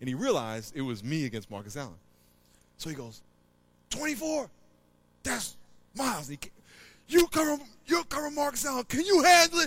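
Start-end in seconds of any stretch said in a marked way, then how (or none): 3.9-9.7 very high, loud coach-style yell. Speaker retells what his coach yelled at him while assigning players, retelling a yell. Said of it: "He's yelling at me".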